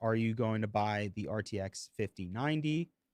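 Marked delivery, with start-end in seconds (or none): none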